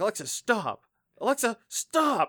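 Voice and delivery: put-on shrill, high, slowly spaced-out, drawn-out yelling. Retelling how someone frustrated with Alexa yelled at it: imitating someone yelling. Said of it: "he felt badly for yelling at this device".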